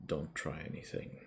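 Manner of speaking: very hushed, barely voiced whisper. Narrator voices a man speaking to the player at a door, very hushed voice. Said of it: "the man just says to you in a very hushed voice".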